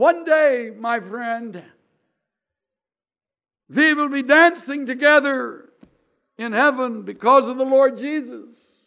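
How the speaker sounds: put-on heavy Dutch accent, very loud. Retelling what a survivor announced to the speaker, in a thick Dutch accent. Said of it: "announced in her thick Dutch accent".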